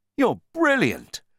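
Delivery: eager, high-pitched exclaiming. The narrator answers his companion's suggestion; exclaiming. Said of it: "I exclaimed".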